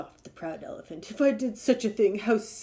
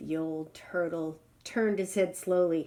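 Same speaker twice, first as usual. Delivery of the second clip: ordinary delivery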